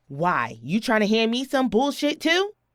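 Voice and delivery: defiant, hostile, confrontational tone with rising pitch. A woman confronts an officer who came banging on her door, loud raised voice. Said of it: "Please lower your voice".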